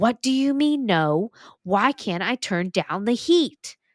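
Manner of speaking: play-acted, protesting, arguing back, yelling very loud. Speaker retells arguing with a ghost, retelling yelling really loud. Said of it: "I started yelling really loud".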